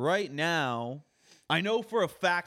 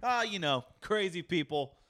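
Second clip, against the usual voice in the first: ordinary talk, nothing marked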